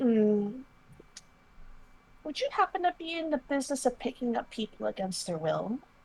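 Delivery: coy, soft, flirty seductive voice. Retelling how she smiles at him and goes, mock-flirty with a smile. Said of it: "give him a smile and go".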